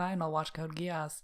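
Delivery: sulky, put-upon, grudging, passive-aggressive tone. Retelling own past reply to a recommendation: imitating own passive-aggressive tone. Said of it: "I say it in that tone".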